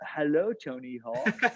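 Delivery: polite, best-behaviour professional voice. Retelling answering an important phone call, in a put-on professional phone voice. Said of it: "go in professional voice".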